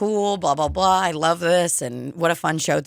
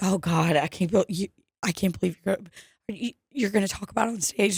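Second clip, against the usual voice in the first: quieter put-on panicked woman voice; 2 semitones higher, 4 dB quieter than usual. Retelling what a woman said while washing hands: imitating a panicked woman. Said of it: "she was panicked".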